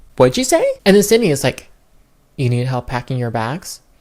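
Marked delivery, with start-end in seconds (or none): 2.4-3.8 flat deadpan delivery, slower. Retelling a woman repeating her question when asked what she said, imitating a flat emotionless delivery. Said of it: "you couldn't give it any more emotion".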